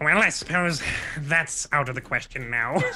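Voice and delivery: scratchy, raspy, small goblin voice. Speaking in character, raspy little goblin voice. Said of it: "coming out with the like the raspy little goblin voice".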